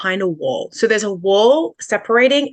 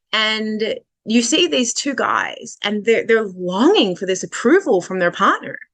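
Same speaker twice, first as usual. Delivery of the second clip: ordinary delivery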